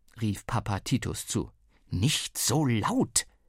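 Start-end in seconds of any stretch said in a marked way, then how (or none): 1.9-3.3 hissing voice. Searching by flashlight at night, a mother hushes the father, hissing. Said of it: "zischte Mama".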